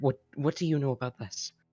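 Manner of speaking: quiet whisper under breath. Voicing a character who pulls Fifi close: whispering under breath. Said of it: "whisper under her breath".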